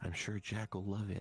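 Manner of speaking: low, muted, low-toned voice kept down. A character speaks in a low tone before walking into the store. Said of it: "not a whisper, but like in a low tone".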